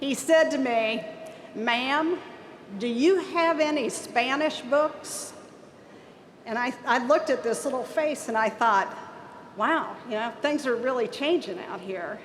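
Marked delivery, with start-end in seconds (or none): 1.6-5.3 heavy, slow, thick southern Ohio drawl. Act out a kid who came flying through the door, speaking in a thick southern Ohio accent. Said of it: "he says in his thickest southern Ohio accent".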